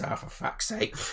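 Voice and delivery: hushed, soft, breathy little goblin voice. Voicing a little goblin who climbs out of a wrestling ring: put-on goblin voice. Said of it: "the goblin kind of says".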